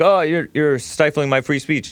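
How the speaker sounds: ordinary talk, nothing marked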